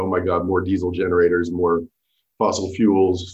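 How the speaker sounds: low, sarcastic groan, "fossil fuels" dragged out. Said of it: "me being very sarcastic".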